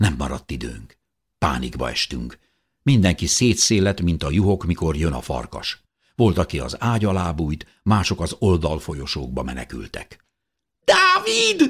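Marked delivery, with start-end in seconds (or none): 10.8-11.7 very high, shrill, screeching shriek. Narrator reads a companion calling out as everyone scatters in panic, shrieking a name. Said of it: "visította Szozánne".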